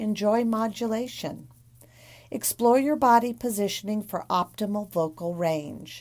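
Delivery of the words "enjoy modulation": ordinary talk, nothing marked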